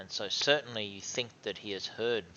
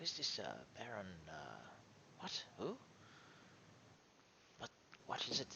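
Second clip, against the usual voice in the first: very soft, hushed, barely-there voice; 14 dB quieter than usual. Voicing a character during a game, asking who this is, speaking very quietly. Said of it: "And he's like very very quietly speaking now".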